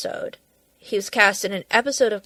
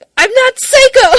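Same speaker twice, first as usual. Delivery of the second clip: piercing, shrill, very high, full-volume shout; 13 dB louder than usual. Recalling a comedy episode, imitating Donald Glover yelling. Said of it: "Donald Glover yelling".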